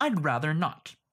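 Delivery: slightly defiant tone slipping through. Wesley answers a pirate who asks his name, slightly defiant. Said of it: "Wesley let a bit of his defiance slip through".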